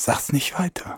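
hushed whisper. Admitting something to Markus in conversation, whispering. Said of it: "Warum flüsterst du?".

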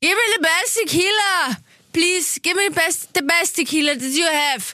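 mock-drunk slurred speech. Retelling what a man said to the waiter, imitating drunk slurring. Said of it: "in einem sehr lallenden Ton".

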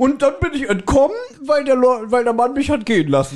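high, breezy, mocking character voice.

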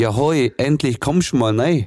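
Swabian German dialect. Retelling how a Swabian lady greeted the speaker: Swabian dialect. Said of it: "sie in dem Dialekt so".

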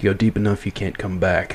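low, steady tone. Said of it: "and he goes".

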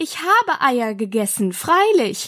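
ordinary delivery, nothing marked

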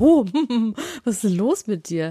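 slow, swooping, teasing tone. Mimicking the other speaker's reaction after hearing rude words: mocking imitation of the other speaker. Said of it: "und schon wirst du".

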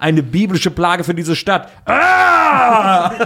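big over-the-top freakout, swooping pitch, stretched "Ah". Retelling what a man said, acting it out as a King Kong imitation. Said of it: "als würde er so King Kong das nachmachen".

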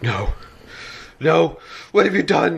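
voice full of tears, slow tearful delivery. A character sees the body and speaks to the two standing there, tearful. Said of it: "tears already welling up".

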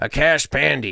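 said in American accent. Saying someone's name the American way: Tommy Lee Jones American accent. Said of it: "American style, I would say like a Cash Pandey".

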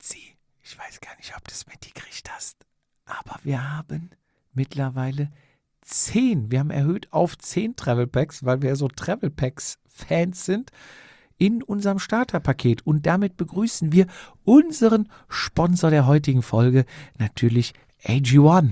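hushed theatrical whisper. A podcast host reads the episode's sponsor message to the co-host, half-whispering. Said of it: "Warum flüsterst du denn so?".

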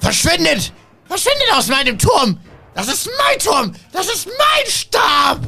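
very high, swooping, pompous, angry wizard shout. Game master voicing the tower wizard calling out during the fight, as the wizard calling out.

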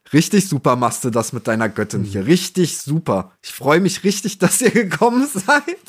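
sarcastic, passive-aggressive tone with a swooping pitch. Mimicking characters who all talk in one tone, mock passive-aggressive sarcasm. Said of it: "sehr passiv-aggressiv-sarkastische Welt. ... Die haben immer alle nur so eine Tonlage".

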